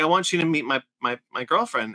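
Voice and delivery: ordinary delivery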